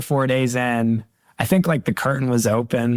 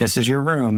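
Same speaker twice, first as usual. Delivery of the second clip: ordinary talk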